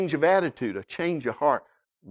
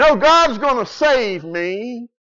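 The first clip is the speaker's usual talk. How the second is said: loud, slow, drawn-out spiritual revival preacher cadence; 8 semitones higher, 5 dB louder than usual. Retelling a man on his roof turning down a helicopter rescue, in revival preacher tone. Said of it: "he said it real spiritual like that".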